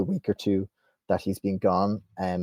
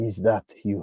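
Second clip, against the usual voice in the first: very weak, faint, feeble voice. Voicing a captive speaking weakly into a mind: very weak voice. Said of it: "almost too weakly for you to hear".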